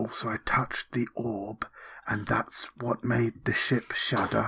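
soft, hushed whisper under the breath. A character leaning in to report news to a companion, whispering.

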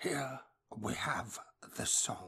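slow, hushed, breathy documentary narrator delivery. Asked about impressions, doing a David Attenborough narrator impression. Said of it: "David Attenborough".

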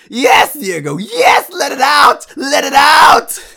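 very loud, very high, swooping, ecstatic scream. Retelling the coach's reaction to the outburst, imitating a coach screaming ecstatically. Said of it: "my coach screamed with ecstasy".

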